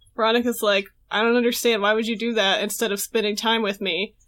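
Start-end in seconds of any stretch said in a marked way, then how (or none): none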